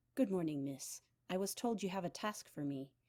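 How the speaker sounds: hushed, deferential and respectful voice. Her father's spy greets Rue as he steps in, in a hushed, respectful voice. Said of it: "he said in a hushed, respectful voice".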